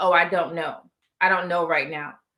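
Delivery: dull, bland, uninflected monotone. Imitating a bland type of guy who answers: imitating a monotone guy.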